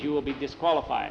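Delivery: plain reading voice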